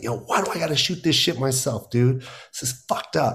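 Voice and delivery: angry ranting outburst. Retelling own complaint backstage before walking out on stage: imitating own angry rant. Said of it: "I was so mad".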